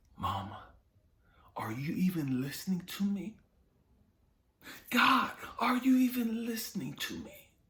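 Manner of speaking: anguished crying out, very high pitched. Retelling crying out to mama, imitating own crying plea. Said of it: "I would cry out to my mama".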